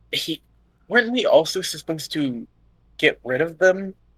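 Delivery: hushed whisper. In a role-play game, a player's character questions the group, whispering. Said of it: "I was trying to make my voice quieter".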